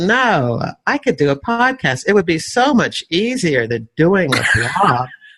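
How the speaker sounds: heavily sarcastic, dripping, sing-song delivery. Retelling a past thought about starting a podcast: retelling own thought with dripping sarcasm. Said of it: "I take it you hear the sarcasm dripping".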